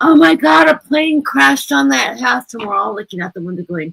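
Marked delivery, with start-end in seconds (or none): 0.0-2.5 mock shrill, very high, rough, drawn-out scream. Retelling what a daughter in junior high screamed at the dad's house, imitating someone screaming. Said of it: "She's screaming".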